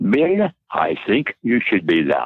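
put-on German-Swiss accent with sing-song swings. Recalling how Elizabeth answered his thanks for the invitation, in Elizabeth's German-Swiss accent. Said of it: "in her German-Swiss accent".

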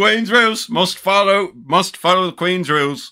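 put-on British accent. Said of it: "You have to say that in a British accent".

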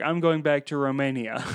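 normal talking voice

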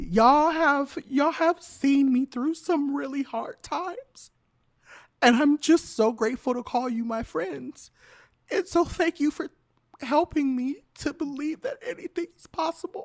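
weeping, tearful, high crying speech. The host thanks listeners on episode 8: crying while talking. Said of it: "I'm already crying like this".

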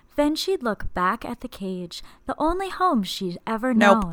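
put-on soft, little-kid-like reading voice. Imitating an author reading her audiobook: Glennon Doyle's soft voice. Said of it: "It's almost like a little kid".

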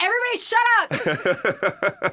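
sudden, shrill, swooping mock yell. As maid of honor watching a game on the TVs, she recalls: retelling a yell. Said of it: "I just yelled".

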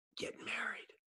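hushed sotto voce whisper. Retelling a basketball player's answer about his biggest regret: imitating a whisper. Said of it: "sotto voce, whispers".

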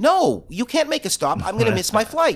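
mock worked-up, agitated, pleading tone. Retelling a taxi ride, the passenger repeats what they told the driver: imitating agitated pleading. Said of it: "So I'm like getting very agitated".

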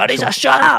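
very high, very loud, shrill scolding yell. Speaker quotes the roommate scolding the smart speaker; retelling a loud yell. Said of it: "这样子大叫".

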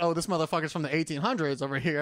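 ordinary talk

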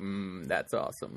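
weird mid-swallow speech, low, soft and slow. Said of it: "I said that all weird".

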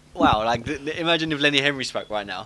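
ordinary talk

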